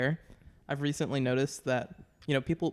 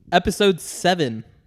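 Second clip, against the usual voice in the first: very loud, booming delivery; 4 semitones higher, 10 dB louder than usual. Announcing the episode number so it has to be edited out, speaking loudly. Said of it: "I just spoke loudly".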